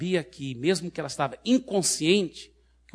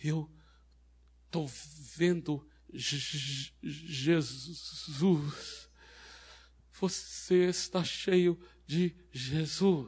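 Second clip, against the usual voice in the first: put-on stuttering masculine demon voice, much quieter, slower; 5 dB quieter than usual. Retelling how a frightened demon answered her, imitating a stuttering masculine demon. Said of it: "gaguejando, mas ele ainda disse naquela voz masculina dele".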